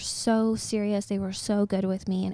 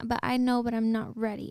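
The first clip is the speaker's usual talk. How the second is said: imitated crying sounds; 2 semitones higher, 3 dB quieter than usual. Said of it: "And I'm crying on the phone".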